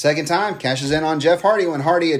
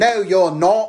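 put-on Australian accent; 4 semitones higher, 3 dB louder than usual. Retelling a repetitive talking segment, answering Charlotte: Rhea Ripley impression. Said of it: "Great Australian accent".

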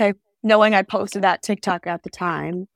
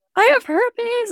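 mock sobbing cry, very high-pitched. Recounting calling their dad, acting out their own past sobbing. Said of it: "And I'm just like sobbing".

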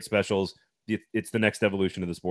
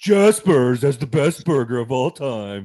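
loud, mocking, ridiculing voice; 3 semitones higher, 7 dB louder than usual. Describing a co-host's voice for making fun of fans: Adam Vingan's fan-mocking voice. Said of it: "the other Adam Vingan voice voice that you do".

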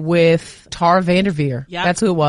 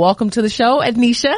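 usual speaking voice

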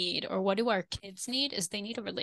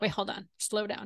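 ordinary delivery

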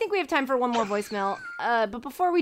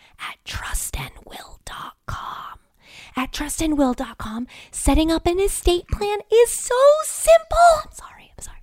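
hushed, whispered librarian voice; 8 semitones higher, 5 dB louder than usual. Reading an ad as a librarian afraid of talking too loud who keeps getting excited. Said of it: "as a librarian who's afraid of talking too loud".

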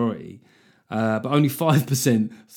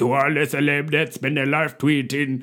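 sudden, put-on Jamaican dancehall accent; 4 semitones higher than usual. Addressing celebs who spend their life tweeting, in a sudden dancehall accent. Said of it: "Suddenly went to a dance hall accent".

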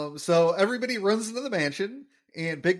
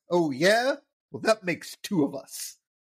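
mean, nasty, hostile, challenging tone. Retelling a scene, Skinner answers Big Daddy's boast in a mock-mean Skinner voice. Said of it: "Skinner in a mean voice".

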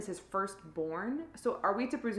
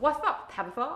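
put-on creepy lisping doll voice, higher; 5 semitones higher, 3 dB louder than usual. Imitating the doll Timmy, who lisps and is creepy: imitating Timmy's creepy lisp. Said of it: "he has a lisp".

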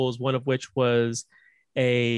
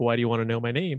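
acted flirtatious tone; 2 semitones lower than usual. Retelling a movie's phone call scene: imitating a flirty tone. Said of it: "kind of flirty".

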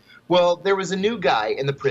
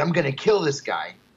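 put-on furious, angry voice. Retelling a threat he staged at dinner: retelling his own put-on angry threat. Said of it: "I had to put on kind of a show".

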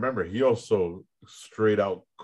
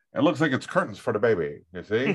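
put-on classic old-timey radio broadcast delivery. Joking that someone's career is over: old radio voice. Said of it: "I'll go back to the old radio voice".

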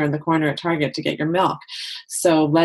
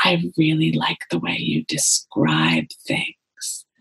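faint, barely audible, soft hushed whisper. Retelling what a woman said after coming back a few minutes later, barely audible whisper. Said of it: "in a barely audible whisper".

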